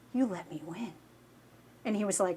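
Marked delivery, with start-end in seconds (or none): 0.1-0.9 scornful, contemptuous, disdainful accusing tone. Retelling a game with a teammate who let them win: retelling with put-on disdain. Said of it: "with this look of just disdain".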